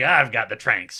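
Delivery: normal talking voice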